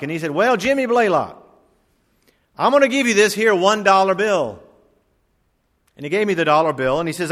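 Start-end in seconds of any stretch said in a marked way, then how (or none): 0.3-4.6 put-on old Southern preacher voice with Georgia accent. Recalling an elderly evangelist who called him up in chapel, the speaker quotes him in a georgia accent. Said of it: "with his Georgia accent".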